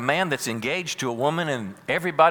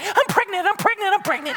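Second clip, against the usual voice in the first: put-on giddy teenage girl voice, higher and louder; 4 dB louder than usual. Acting out Mary telling Joseph her news: imitating giddy Mary. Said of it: "this is a giddy little sixteen, seventeen-year-old girl".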